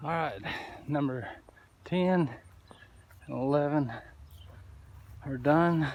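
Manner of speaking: out of breath, winded, halting, broken phrases. Doing yard work on camera, telling viewers two more yards are done, winded. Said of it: "If it sounds like I'm winded, I am".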